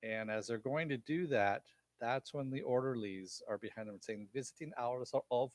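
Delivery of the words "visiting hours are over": clumsy, really bad fake German accent. Recounting a TV show scene, voicing the orderlies in a really bad German accent. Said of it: "That was my really bad German accent".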